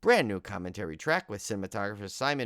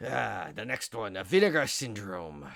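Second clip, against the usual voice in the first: put-on pirate voice, buccaneer-style delivery. Naming the next disc on the list, said like a pirate. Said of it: "I don't know why I said it like a pirate".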